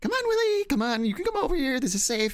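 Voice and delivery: put-on nice voice, very high, sweet and coaxing. Retelling chasing her around the yard in the rain, calling in a put-on nice voice. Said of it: "trying to put on like nice voice".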